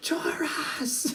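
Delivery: whispered little cry, breathy and hushed.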